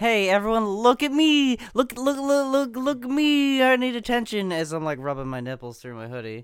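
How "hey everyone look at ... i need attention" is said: very high, very loud, shrill show-off shriek. Mocking people who post for attention: imitating an attention seeker. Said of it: "That's so".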